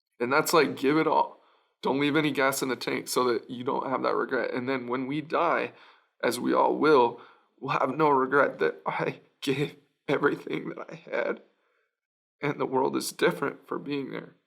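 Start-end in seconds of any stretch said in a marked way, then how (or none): 4.5-14.3 moved, emotional, earnest, heartfelt sincerity. Talking with a conversation partner about a soccer saying: a little emotional. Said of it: "I get a little emotional".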